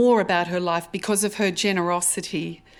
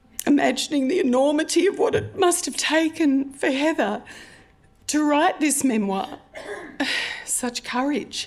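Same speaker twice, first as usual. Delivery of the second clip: emotional, moved delivery, pitched up; 9 semitones higher than usual. Recalling holding the author's printed memoir pages, emotional. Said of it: "I feel emotional about this".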